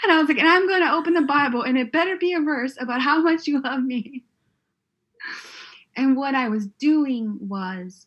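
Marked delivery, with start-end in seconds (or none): 0.4-4.2 mock demanding, pitched-up temper tantrum. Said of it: "it sounded like a temper tantrum".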